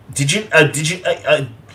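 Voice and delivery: excited stutter with words repeating. Asking someone who also lived in Peoria if they went to Bradley: stuttering. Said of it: "I'm sorry, I'm stuttering".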